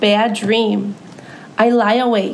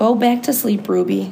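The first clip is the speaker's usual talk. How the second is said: ordinary delivery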